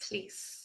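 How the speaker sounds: soft whisper.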